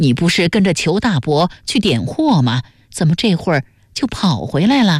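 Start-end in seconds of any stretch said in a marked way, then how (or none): none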